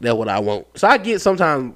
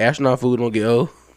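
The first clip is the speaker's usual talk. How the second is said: ordinary talk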